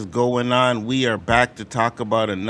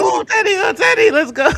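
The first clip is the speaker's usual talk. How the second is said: put-on screaming, higher and louder; 4 dB louder than usual. Retelling how viewers at a watch party reacted: imitating people screaming. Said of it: "they were screaming for Kenny to survive".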